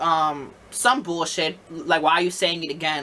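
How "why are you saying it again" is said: mocking, snippy voice with attitude. Retelling a customer's answer: imitating someone with attitude. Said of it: "some attitude sneak bullshit".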